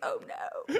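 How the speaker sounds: mock hushed, breathy, whispered dismay. Retelling how a PR person from Apple reacted backstage: imitating a dismayed PR person. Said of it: "the P R person from Apple was like".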